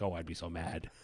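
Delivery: low, soft, grumbling, upset voice. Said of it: "everybody's like".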